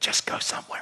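soft, breathy, barely voiced whisper. Acting out an answer to a group's prayer: whispering. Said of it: "And I'll whisper".

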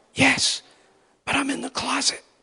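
whispered, pitched very high. Retelling a friend's secret phone call, imitating someone whispering. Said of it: "and he's whispering".

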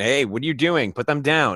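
loud yelling. Recording on a phone and confronting a person in a suit: yelling.

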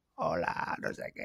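small, throaty, guttural voice, whispered. Speaker retells how his brother talked to him at night, imitating Oscar's guttural voice. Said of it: "él me hablaba así".

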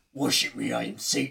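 sinister, menacing, scariest evil villain voice. Asked to do the scariest voice, the speaker performs it: scariest voice. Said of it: "do your scariest voice".

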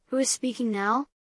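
ordinary delivery

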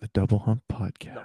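soft low ASMR voice. Asked to say the podcast's name in a low ASMR voice; low ASMR voice. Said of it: "Can you say that in your low ASMR voice?".

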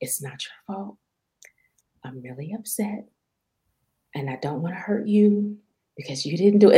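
hushed whisper. Retelling what she said to her after admitting she was angry; whispering. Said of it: "And I started whispering".

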